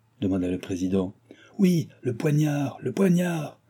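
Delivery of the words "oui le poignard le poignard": several voices shouting together, high. Several voices in the assembly answer the president's question, shouted. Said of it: "quelques voix crièrent".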